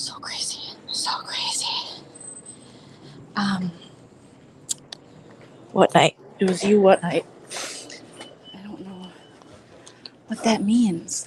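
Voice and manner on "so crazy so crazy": unvoiced, quiet whisper. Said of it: "so I'm whispering".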